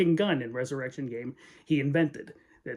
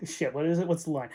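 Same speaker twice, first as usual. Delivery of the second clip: usual speaking voice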